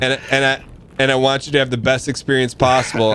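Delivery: ordinary talk, nothing marked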